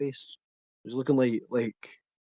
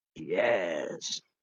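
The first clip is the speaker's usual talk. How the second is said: put-on little evil sinister voice, lower; 8 semitones lower than usual. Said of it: "Puts on a little evil voice".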